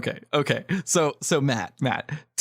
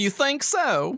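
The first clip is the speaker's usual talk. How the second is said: very high-pitched, put-on Southern accent; 11 semitones higher than usual. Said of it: "I want to do Southern".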